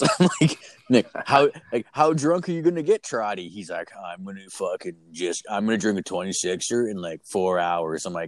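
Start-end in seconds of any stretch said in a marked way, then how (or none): 4.0-8.1 low, deadpan, one-note monotone drone. Retelling a conversation, the speaker quotes Nick: imitating Nick's low monotone. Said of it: "he's like this low monotone dude".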